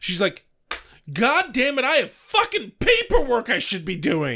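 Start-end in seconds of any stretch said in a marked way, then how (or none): 1.1-4.4 very high, swooping, fed-up annoyed rant. Retelling Anne's reaction to demons in her shelter: imitating Anne, annoyed. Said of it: "She just seems annoyed".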